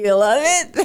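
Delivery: slow, put-on unenthusiastic and sarcastic tone. Retelling how the other speaker asked on the phone: imitating a sarcastic question. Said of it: "it was kind of sarcastic".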